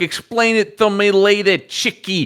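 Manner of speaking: put-on old showbiz producer voice. Retelling a show character's lines: old showbiz Broadway producer voice. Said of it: "this stereotype of".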